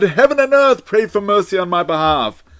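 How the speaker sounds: high, loud, pleading cry.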